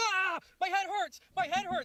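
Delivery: very high, drawn-out angry scream. Retelling how a date reacted at home: imitating someone screaming angrily. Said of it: "she starts screaming at me, like, angry".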